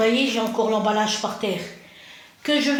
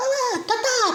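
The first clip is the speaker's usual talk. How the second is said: put-on tiny little-boy voice; 10 semitones higher than usual. Retelling what a little boy said to her, imitating a little boy's voice. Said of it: "c'est sa petite voix, il était petit".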